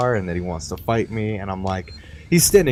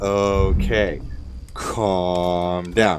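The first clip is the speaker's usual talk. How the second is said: ordinary talk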